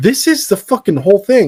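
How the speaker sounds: mock furious outburst. Retelling own reaction to a film's reused apartment set: retelling own livid rant. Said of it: "I was livid".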